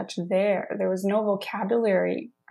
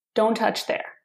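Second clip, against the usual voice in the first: firm, stern, commanding grandfatherly voice, acted; 2 semitones higher than usual. Retelling what a grandpa said on walking in: imitating a commanding tone. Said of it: "in a more so of a commanding tone of voice".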